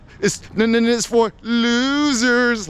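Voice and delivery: high, silly, funny trolling voice, losers stretched. Vlogger demonstrating how to disparage something: funny voice. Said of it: "you just say in a funny voice".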